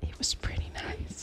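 whispered voice. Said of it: "Welcome to the A S M R section".

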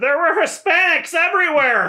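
very high-pitched, shrill yelling out. A caller describing what they just saw to someone asking questions, yelling. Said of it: "I yell".

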